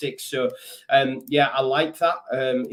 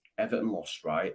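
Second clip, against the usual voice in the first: quiet, hushed, careful, discreet voice; 6 semitones lower, 8 dB quieter than usual. Mentioning Everton's loss while Everton fans are downstairs: quiet tones. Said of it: "I'm saying it through quiet tones".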